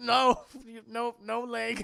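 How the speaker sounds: slow mock stifled laughter. Retelling a movie scene: imitating Michael Parks holding back laughter. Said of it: "Michael Parks trying not to laugh".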